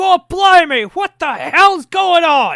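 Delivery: very high, very loud, shrill, swooping shouts. Narrating guards running their way down, voicing them: yelling guards. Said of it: "they're yelling like".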